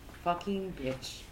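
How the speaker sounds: muttered under breath. Player's character reacting after hearing of a female drow, under the breath. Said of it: "I go under my breath and say".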